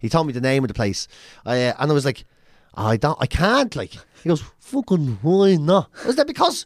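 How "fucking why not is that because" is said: put-on Dublin accent, much higher. Retelling a man's reply to his refusal, imitating a real Dublin accent. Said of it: "he had a real Dublin accent".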